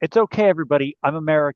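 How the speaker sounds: loud voice projected to a whole room. Playing a character who reassures everyone in the room: saying loudly. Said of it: "and loudly say".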